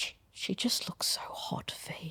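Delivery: whispered, almost apologetic. Retelling what a father whispered during a birth: imitating a whisper, almost apologetic. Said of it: "he's just whispered at me, a-, almost apologetically".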